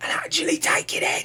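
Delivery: pointed, unvoiced whisper.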